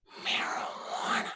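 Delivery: secretive, breathy, hushed whisper, barely voiced. Retelling a voicemail she left him, say the word as retelling a whisper. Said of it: "she whispered it".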